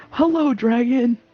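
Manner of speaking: very loud call. Player character calling out to a dragon that hasn't noticed them, really loudly. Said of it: "I'm gonna say really loudly".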